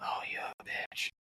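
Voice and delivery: soft, slow, whispered mocking jab.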